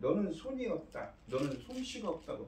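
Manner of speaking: indignant, protesting tone.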